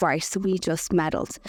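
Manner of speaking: ordinary talk, nothing marked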